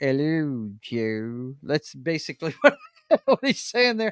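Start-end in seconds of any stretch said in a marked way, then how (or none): 0.0-1.5 very low, soft cartoon dog voice. Acting out a man's greeting as listeners should imagine it, in a Droopy dog voice. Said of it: "imagine Martin saying this with the droopy dog voice".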